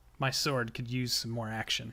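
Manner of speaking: muttering quietly under her breath. Voicing Sin, who mutters under her breath after nodding at the boss: muttering under her breath. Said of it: "under her breath".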